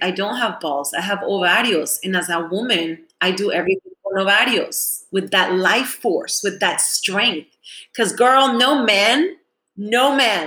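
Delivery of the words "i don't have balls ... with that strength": plain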